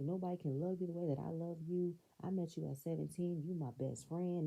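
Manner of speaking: usual speaking voice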